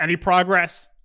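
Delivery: loud yell from across the room. Game master voicing a drow who calls back to the players, yelling back. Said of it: "what the drow with the tentacle yells back and goes".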